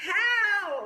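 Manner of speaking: very high, very loud, drawn-out desperate yell. Leading a group to shout the word from the chart: mock cry for help. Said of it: "Did you wanna cry for help?".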